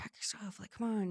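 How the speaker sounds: very soft, barely voiced hushed whisper. Retelling whispering to another person to pack up: imitating a whisper. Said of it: "now we're just back whispering to each other".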